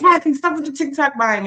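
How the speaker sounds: put-on high yelling. Recalling calling out to someone in the next room; retelling a yell. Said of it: "I'm yelling from the next room".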